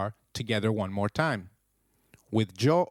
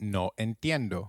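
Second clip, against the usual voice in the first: ordinary talk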